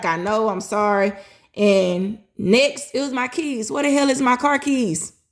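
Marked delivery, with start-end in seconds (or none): 0.0-1.1 put-on crying, tearful voice. Retelling apologizing to Mama in the hospital: retelling own crying apology. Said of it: "I'm, like, crying".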